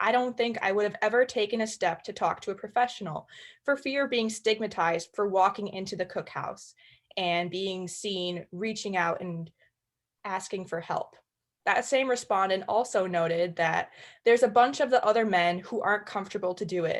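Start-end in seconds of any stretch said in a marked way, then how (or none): none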